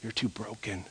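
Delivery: soft, hushed whisper full of fear. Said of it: "Comes along and says".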